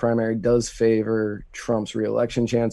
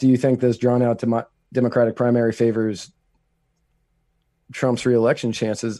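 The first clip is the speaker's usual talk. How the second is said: normal talking voice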